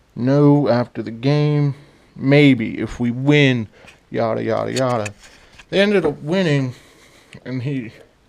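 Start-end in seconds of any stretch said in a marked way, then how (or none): none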